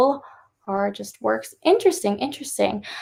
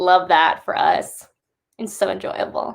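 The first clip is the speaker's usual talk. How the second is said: heavy sarcastic tone meaning the opposite; 3 semitones lower than usual. Commenting on classic authors being notoriously racist: sarcastic. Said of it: "I'm being sarcastic".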